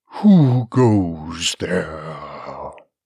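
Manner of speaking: deep, booming, rumbling voice, there drawn out. Reading a hidden voice that challenges her as she enters a dim room: deep, booming voice. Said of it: "The wall rumbled at the deep, booming voice".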